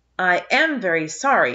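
firm, steady delivery. Anne repeats her apology to the neighbor whose oats were trampled, firm. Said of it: "repeated Anne firmly".

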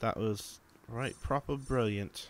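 obviously fake, put-on British accent. Cheering after a good result in the game: put-on British accent. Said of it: "talking in a British accent".

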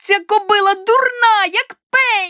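loud, very high-pitched, drawn-out shout. Narrator reads a character shouting before leaping to a mare: shouted. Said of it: "крикнула вона".

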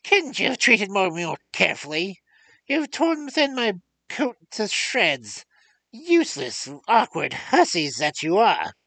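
high screeching dwarf voice. Narrating a fairy tale, the reader voices the dwarf screaming in a screeching voice. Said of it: "He screamed in his screeching voice".

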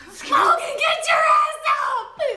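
very high, shrill, very loud screeching shriek. Retelling how mom woke the speaker up the next morning; imitating mom screeching. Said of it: "By the sound of my mom's voice screeching".

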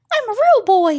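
put-on very high wooden-puppet boy voice. Answering a request to say the real boy line: Pinocchio voice. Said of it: "Can you do it?".

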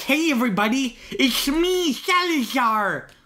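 put-on very slow, high, drawn-out, goofy Spanish accent. Mocking how the villain announces himself, imitating Salazar's goofy Spanish accent. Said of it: "he's kinda talking like that".

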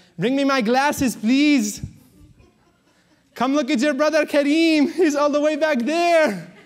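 put-on loud, very high-pitched, heavy Egyptian accent. Imitating his mom calling his little brother over to look, heavy Egyptian accent. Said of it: "in her heavy Egyptian accent".

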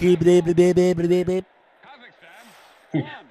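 put-on stuttering cartoon pig voice. Stammering nonsense while another speaker names it: Porky Pig voice. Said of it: "Porky Pig".

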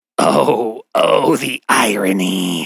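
hissed, serpent-like creature voice. Narrator reading a laughing creature speaking to mr. davis, hissing. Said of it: "it hissed at Mr".

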